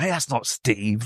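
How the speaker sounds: slow, soft, annoyed and irritated tone. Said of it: "people were a bit annoyed".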